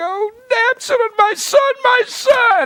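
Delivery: mock tearful, slow, drawn-out wailing, very high pitch. Retelling a father's grief over his son: imitating someone weeping. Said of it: "David starts weeping and crying".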